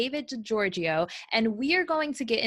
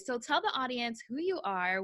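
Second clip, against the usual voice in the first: ordinary talk, nothing marked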